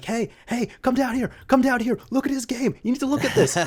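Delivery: put-on very high, loud hollering. Retelling how dad called mom down to see the game: imitating dad yelling. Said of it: "yelling at my mom".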